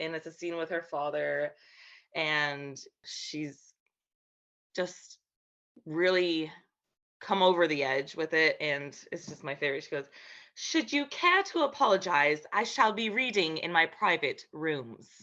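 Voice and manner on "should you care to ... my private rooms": prim, proper, dignified lady voice, cool propriety. Asked for a line, performing it as Maid Marian: Maid Marian voice. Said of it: "in your Maid Marian voice?".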